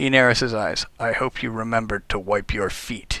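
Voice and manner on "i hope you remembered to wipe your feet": soft, veiled, menacing tone. Olaf the janitor greets the new guild member in a menacing tone. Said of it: "he adds in a menacing tone".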